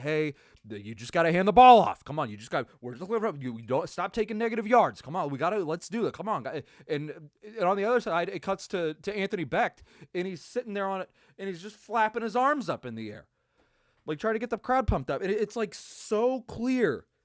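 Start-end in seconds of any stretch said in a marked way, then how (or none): 0.0-6.6 encouraging, urging coach voice. Retelling a broadcast clip of a coach talking in a player's ear: imitating Skip Holtz coaching. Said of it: "Skip Holtz talking to Jamar Smith in his, in his ear".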